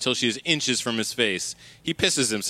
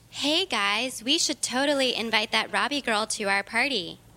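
put-on mean schoolgirl voice, higher; 10 semitones higher than usual. Robbie, hidden in a stall, imitates a classmate: Tiffany number three's voice. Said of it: "She speaks in Tiffany number three's voice".

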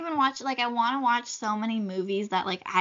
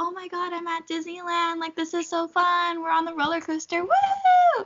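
high screaming with a long drawn-out woo; 7 semitones higher than usual. Retelling Zoe's pretend Disneyland recording: imitating Zoe screaming as if on a ride. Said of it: "screaming as if she's actually on Splash Mountain".

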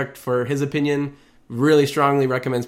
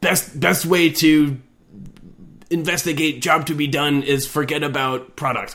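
big, powerful dinosaurish monster voice; 3 semitones higher than usual. Imitating a commenter who wrote in all caps and stilted English, in a Grimlock voice. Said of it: "I like that Grimlock voice".

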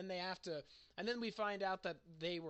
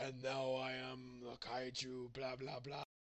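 put-on exaggerated deep voice, much lower pitch; 6 semitones lower, 4 dB quieter than usual. Mocking a movie character whose voice changes when a kaiju takes over: really deep voice. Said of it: "suddenly his voice goes, like, really deep".

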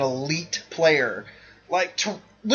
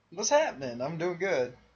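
laid-back, relaxed and easy; 9 dB quieter than usual. A co-host answers the host's greeting at the start of the podcast, relaxed. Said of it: "You sound really relaxed".

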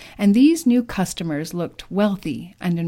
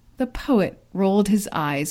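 ordinary delivery, nothing marked

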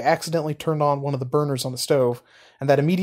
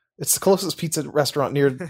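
plain

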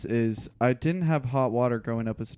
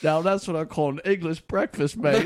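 high-pitched, put-on British accent; 5 semitones higher, 4 dB louder than usual. Joking about steeping like a giant tea bag: put-on British accent. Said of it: "What fucking British person are you talking to?".

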